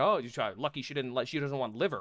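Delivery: ordinary delivery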